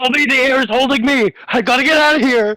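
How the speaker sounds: very high, terrified, panicked screaming. In a game scene, a trapped figure cries out for help, panicked screaming. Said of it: "is screaming like help".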